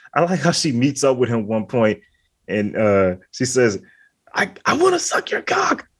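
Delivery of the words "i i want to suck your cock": very high, screamed, pleading voice. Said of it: "she's just screaming this".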